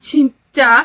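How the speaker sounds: loud, annoyed, exasperated sigh. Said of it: "짜증과 한숨을 섞어가며".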